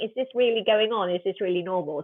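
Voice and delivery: ordinary talk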